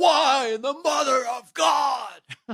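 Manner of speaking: very high, slow, stretched-out, drawn-out delivery. Suggesting calling for help when upset: Nicolas Cage impression. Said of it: "You just call Nicolas Cage".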